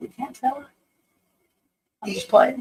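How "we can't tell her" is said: hushed whispering voice, quieter. Secretly watching others so someone nearby won't hear: whispering. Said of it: "whisper so Heather don't hear".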